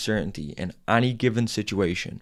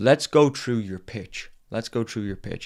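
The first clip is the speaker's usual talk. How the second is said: put-on American accent. Retelling what a guy said before hearing the speaker's sales pitch, american accent. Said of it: "And there's an American accent".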